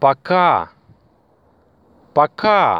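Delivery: пока with stress on the second syllable.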